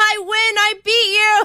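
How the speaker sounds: very high, drawn-out, ungracious gloating. Showing off a practiced victory laugh over a rival. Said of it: "practicing my, you know, victory laugh".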